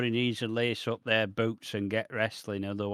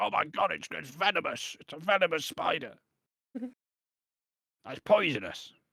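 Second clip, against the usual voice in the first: put-on British accent, pitched high; 6 semitones higher than usual. Retelling Taz's reaction as the spider walks on O D B, Taz with a British accent. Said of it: "I don't know why you made Taz British".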